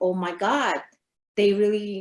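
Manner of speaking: normal talking voice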